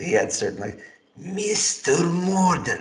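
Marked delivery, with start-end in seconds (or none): 1.2-2.8 every syllable dragged out, pitched up. Recalling the actor's delivery of certain lines: dragged-out Peter Jurasik delivery. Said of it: "certain things were just dragged out".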